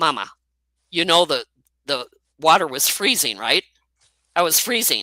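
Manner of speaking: plain, no-fuss, matter-of-fact delivery. Retelling what the son said about the freezing water: imitating son's matter-of-fact tone. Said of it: "he was so matter of fact about it".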